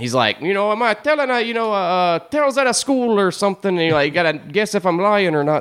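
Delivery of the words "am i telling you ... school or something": put-on Irish accent, pitched up. Describing a funny man's limerick-telling irish character: imitating an irish accent.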